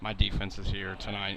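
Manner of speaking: plain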